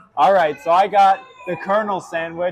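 loud, high-pitched yelling. Reviewing food and announcing the Colonel sandwich, yelling. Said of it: "I don't know why I'm yelling".

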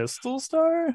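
rising, upward inflection on Pistol Star. Imitating another player's answer: imitating an upward question inflection. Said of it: "He kinda said it with an upwards inflection".

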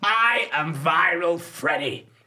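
camp theatrical put-on voice. Doing a new impression, very thespian and camp: camp theatrical Viral Freddie voice. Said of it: "That's my new impression of him. He's very, like, thespian and camp".

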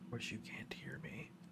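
soft, unvoiced whisper under the breath.

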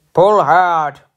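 puffing, straining with effort. Narrator reads one engine's line to another engine as they pull: puffing the words. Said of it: "puffed Gordon".

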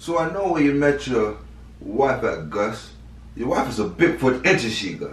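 put-on slight hint of Jamaican accent in voice. Teasing Gus about where he met his wife, slight Jamaican accent. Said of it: "you sound a little Jamaican".

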